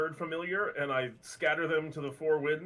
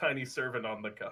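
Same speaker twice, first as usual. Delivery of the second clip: ordinary talk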